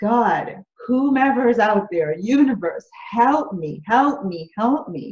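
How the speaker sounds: put-on tearful, pleading, crying voice. Retelling sitting on the floor crying: imitating her past crying plea. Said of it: "I just started crying, like".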